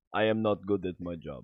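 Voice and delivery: put-on Russian spy voice. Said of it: "why do you sound like a Russian spy".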